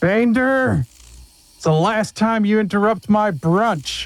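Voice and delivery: loud, high-pitched shout. Voicing Morid shouting at another character across the area: Morid shouting loudly. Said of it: "you hear a loud voice".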